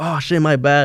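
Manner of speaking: mock frightened, scared, flustered, apologetic tone. Retelling how two guys jumped up apologizing: imitating scared guys. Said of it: "all scared".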